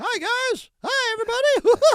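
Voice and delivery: squeaked out, pitched way up high. Speaker voices a cardboard cutout of someone absent, greeting everyone: Mickey Mouse voice. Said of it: "that's a Mickey Mouse".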